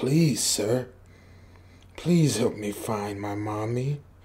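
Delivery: low, hushed, pleading demon-like voice. Retelling what a little girl came up and said to him, in a demonic-sounding voice. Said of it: "like uh demonic sounding voice".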